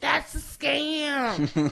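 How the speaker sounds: high-pitched, slow, creaky voice.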